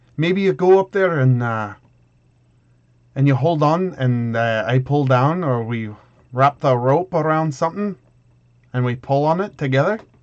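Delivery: put-on Scottish-accented voice. Player in character proposing a rope plan to a companion, in a scottish accent. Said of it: "I'm still doing Scottish".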